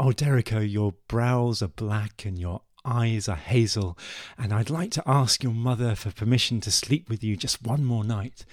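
normal talking voice

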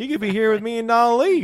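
shrill, booming, very loud, high put-on country-boy accent. Urging someone to stay tonight instead of going, in a country boy accent. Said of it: "with an accent".

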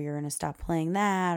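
ordinary talk

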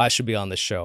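ordinary delivery

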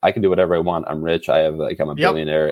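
plain

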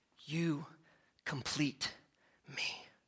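very quiet, low, hushed movie-star style delivery. Retelling a romantic movie scene line: Tom Cruise impression. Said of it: "I looked and sounded like Tom Cruise right there".

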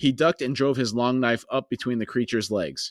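ordinary delivery

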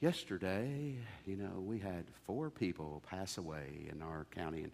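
very low, very quiet, solemn announcer voice. Recalling the daily local radio death report, imitating a solemn radio announcer. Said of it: "in a very solemn voice would get on there and go".

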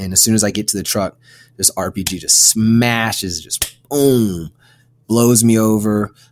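normal talking voice

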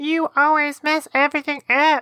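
cartoonish, squeaky, very high-pitched voice. Demonstrating how an insult feels less serious, in a cartoonish, squeaky voice. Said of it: "in a cartoonish, squeaky voice like".

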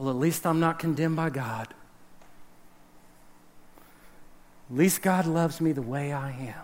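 worn-out, very low, quiet, hushed mumble. Acting out what tired believers say: imitating a tired believer. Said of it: "we're tired and we're like".

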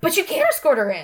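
sudden, high-pitched, loud blurted outburst. Reading the story, Cressida interrupts Bridgerton and Miss Sheffield: blurted out. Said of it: "Cressida blurted out".

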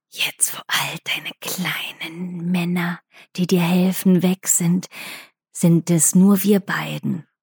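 quiet, taunting whisper. In a game, asked what the character whispers: whispered taunt. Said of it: "Was flüsterst du jetzt zu?".

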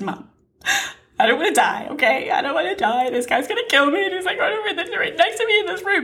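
put-on high-pitched sobbing, words pushed out through tears. Retelling calling mom about the man in the room: imitating own crying. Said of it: "I called my mommy, and I cried".

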